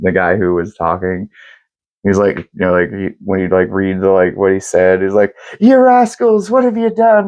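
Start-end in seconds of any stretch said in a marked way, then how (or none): 5.6-7.3 fake very high-pitched Irish brogue. Speaker mimicking a reader who voiced a character, put-on Irish brogue. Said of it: "put a brogue on it".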